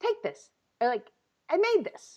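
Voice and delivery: high, easy, casual delivery. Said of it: "he just comes over and he goes".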